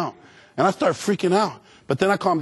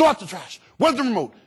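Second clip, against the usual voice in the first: mock, high-pitched hollering; 6 semitones higher than usual. Describing how his father talks to him at home: imitating dad yelling. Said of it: "the way my dad communicates with me is by yelling".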